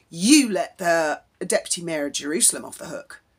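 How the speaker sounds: ordinary delivery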